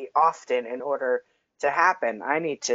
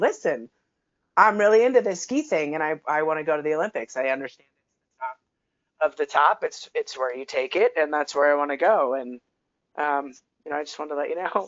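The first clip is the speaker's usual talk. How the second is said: ordinary talk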